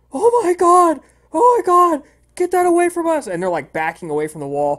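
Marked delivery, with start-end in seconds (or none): 0.2-3.3 terrified, very high, very loud, shrill shrieking. Storyteller acting out three men backing away from the wall, acting out screams of fear. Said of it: "scream in fear".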